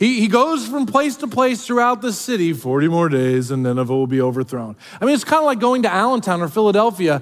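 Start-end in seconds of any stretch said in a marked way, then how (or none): 2.5-4.8 flat monotone, much lower pitch. Quoting the sermon he preaches throughout the city: Ben Stein monotone voice. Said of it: "I kind of hear it in a Ben Stein voice".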